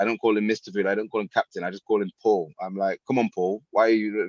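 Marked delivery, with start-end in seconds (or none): 3.1-4.3 put-on taunting tone. Retelling how they spoke to him in the voiceover: imitating a taunting tone. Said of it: "in a very kind of taunty way".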